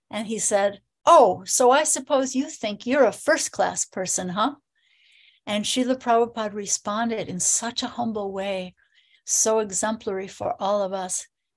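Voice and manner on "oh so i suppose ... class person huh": acted-out arrogant, proud, taunting tone. Retelling a student's challenge at a university talk: imitating an arrogant challenge. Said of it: "one proud, arrogant student challenged him".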